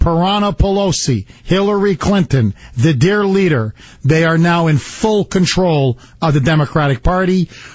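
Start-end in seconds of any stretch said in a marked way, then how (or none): none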